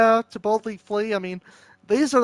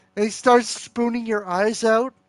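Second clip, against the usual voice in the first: usual speaking voice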